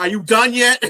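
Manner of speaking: very high, very loud, shrill sass with attitude. Retelling what James said when he unmuted on the call, mimicking someone's attitude. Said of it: "said it with an attitude too".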